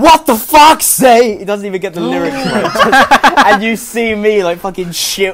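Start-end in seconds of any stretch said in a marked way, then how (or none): 0.0-1.4 shrill, very high, loud, booming, drawn-out scream. Retelling how a man unaware of being filmed popped his head in, retelling a scream. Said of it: "just screams like".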